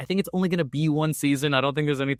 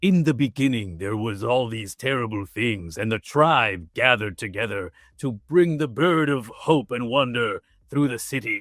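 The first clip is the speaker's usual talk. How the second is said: low, put-on show-opening storyteller narrator voice; 4 semitones lower than usual. Describing an anime's opening, imitating a narrator voice. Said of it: "this narrator voice that's like".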